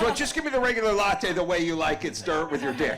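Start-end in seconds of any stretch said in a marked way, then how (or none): none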